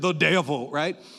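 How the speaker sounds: put-on deep Southern preacher accent. Speaker giving the answer to a church question, in a Southern preacher accent. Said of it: "I just feel like a good Southern preacher".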